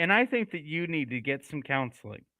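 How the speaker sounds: calm, unbothered, even, matter-of-fact doctor's tone. Describing a scene, retelling the doctor's line in a calm way.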